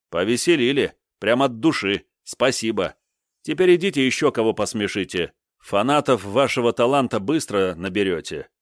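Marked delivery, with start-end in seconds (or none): none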